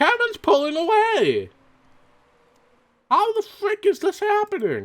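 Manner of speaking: excited high pitch.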